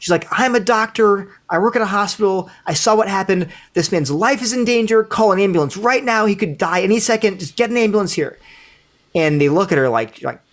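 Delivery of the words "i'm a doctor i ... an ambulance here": put-on hysterical, frantic woman's voice, higher. Retelling a stranger's urgent warning to a crowd: imitating a hysterical woman. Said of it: "You're hysterical".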